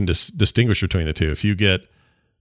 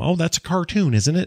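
very high-pitched motherly voice; 10 semitones higher than usual. Discussing a Spider-Verse suit in a Spider-Man game, imitating their mom. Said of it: "I sound like my mom".

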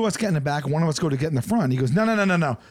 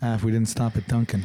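put-on mutter under breath, much lower pitch; 6 semitones lower than usual. Speaker repeats what they said when they passed Duncan: retelling an under-breath mutter. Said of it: "I just said it like under my breath".

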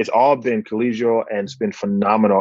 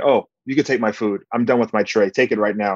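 put-on dismissive tone, faster pace. A doctor retelling being shooed away by patients, imitating a dismissive patient. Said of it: "I've been dismissed, shooed away by the patients".

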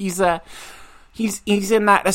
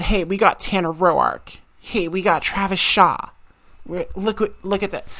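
ordinary talk, nothing marked

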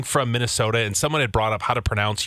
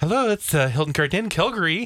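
high, sing-song voice. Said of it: "she answered the phone".

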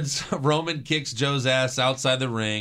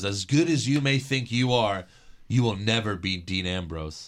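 put-on very serious tone, lower; 4 semitones lower than usual. Retelling a wrestler's backstage line to a rival: imitating a really serious tone. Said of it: "gets really serious and he says".

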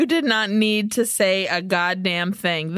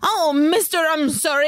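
put-on manic dubbed voice, higher, faster; 6 semitones higher than usual. Mocking the voice a dub gave a character, imitating a manic dubbed voice. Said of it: "It was so manic and crazy".

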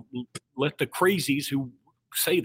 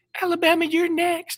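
very high pitch, confident, challenging tone; 4 dB louder than usual. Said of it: "in such a [name]-esque voice".

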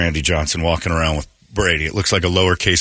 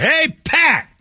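put-on, very high screamed yell. Recalling greeting a man in the booth at the Phoenix Open, retelling a scream. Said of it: "And I screamed out".

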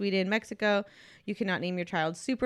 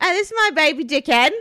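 booming, loud, high put-on Australian accent; 8 semitones higher, 9 dB louder than usual. Joking about a baby name banned in Australia: put-on Australian accent. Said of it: "Is that an Australian accent?".

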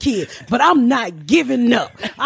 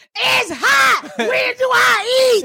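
play-acted squeaky, very high, dragged-out child's holler; 12 semitones higher than usual. Retelling what a complaining child at T-ball yelled: imitating a daughter yelling. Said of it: "she was out there yelling".

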